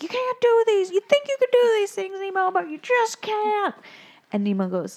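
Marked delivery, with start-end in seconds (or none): 0.0-3.7 very high, all-out screaming, scolding tone. Retelling a scene where a dad yells at Nemo before his class, retelling a scream. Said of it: "and just screams at him".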